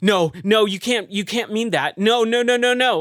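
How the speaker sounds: frantic, high, loud, panicked freaking-out voice. Retelling how a game character reacts to a time loop: imitating a character freaking out. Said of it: "and freaking out".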